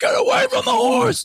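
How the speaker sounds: play-acted, shrill, very high-pitched, loud scream. Retelling how riders react when strangers grab the reins: imitating someone screaming. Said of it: "the people on the horses scream".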